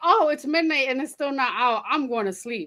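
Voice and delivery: ordinary talk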